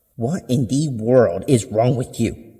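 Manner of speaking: furious, seething, through gritted teeth. Narrator voicing a mother who finds her child's broken plate, angry through gritted teeth. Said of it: "she asked through gritted teeth".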